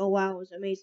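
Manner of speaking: usual speaking voice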